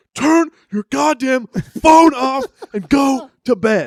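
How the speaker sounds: very high, very slow, loud, drawn-out angry yell. Retelling a roommate yelling at someone on the phone at four a.m.: imitating David yelling. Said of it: "David yelling out loud".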